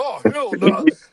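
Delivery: put-on voice dropped extra deep. Retelling what someone said when he came: imitating an extra deep voice. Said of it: "came with the extra deep voice".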